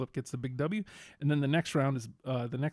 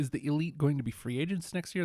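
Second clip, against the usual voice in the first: ordinary talk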